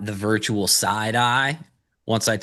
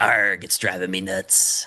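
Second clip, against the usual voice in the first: put-on, salty sea-pirate growl; 3 semitones lower than usual. Telling a bar joke, the speaker gives the pirate's reply in a pirate voice. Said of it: "And the pirate goes".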